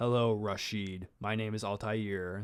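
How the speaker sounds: put-on flat American actor voice. Mocking a game character's voice: Altair as a B-grade American actor. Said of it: "he kinda sounded like a B-grade American actor".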